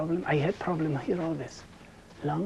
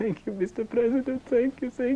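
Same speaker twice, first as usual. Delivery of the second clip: imitated tearful voice, higher and louder; 7 semitones higher, 6 dB louder than usual. Retelling a call with the president, imitating own past crying. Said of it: "I was like crying like a little child".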